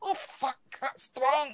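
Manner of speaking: tiny, very high little voice. Narrator voicing a tiny voice heard from inside a jug: tiny voice. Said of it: "You swear you can hear a tiny voice".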